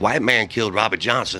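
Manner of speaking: usual speaking voice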